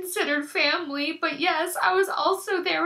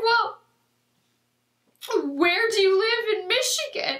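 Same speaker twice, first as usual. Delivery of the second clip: mock snappish, curt, snapping tone; 3 semitones higher than usual. Retelling being questioned after separating from family, imitate the man snapping at them. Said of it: "he just keeps snapping at me".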